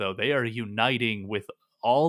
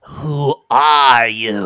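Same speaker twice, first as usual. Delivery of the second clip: very loud, snarling beast-like creature voice; 13 dB louder than usual. Game master voices a creature behind the door: snarling creature voice. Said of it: "It snarls again from behind the door".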